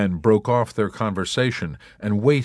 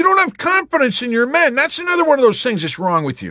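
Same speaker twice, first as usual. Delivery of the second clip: very high, loud, shrill, truculent whining; 5 dB louder than usual. A corporal complains to the chaplain; whined truculently. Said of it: "he whined truculently".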